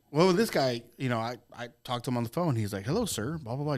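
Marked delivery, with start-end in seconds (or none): 2.8-3.7 put-on courteous, polite, best-behaviour formal voice. Retelling a phone call with a man, imitating his interview voice. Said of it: "Just like his interview voice".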